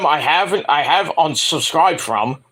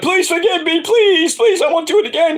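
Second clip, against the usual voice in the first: fake groveling, pleading tone, very high-pitched. Acting out the begging that is denied: mock begging. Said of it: "I'm not begging, like".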